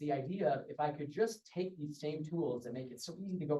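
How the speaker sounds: plain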